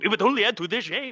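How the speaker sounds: laid-on fake Japanese accent, easily seen through. Joking about fighting samurai, in a fake Japanese accent. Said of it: "in a fake accent like this".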